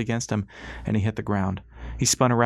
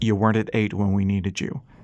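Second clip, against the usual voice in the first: ordinary delivery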